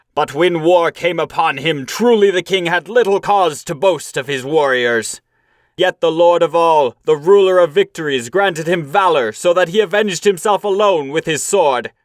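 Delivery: stern, high, angry outcry, cried out. A warrior rebukes the cowards who failed their king: angry outcry. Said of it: "Then [name], sorrowful in soul, looked with anger at the cowards. No soft words had he for the craven-hearted crew. / he cried".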